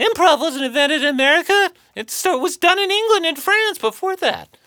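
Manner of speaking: very high shrill voice. Quoting what she said about the book, the speaker does an impression of another person. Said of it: "I'm going to do my impression of her for you".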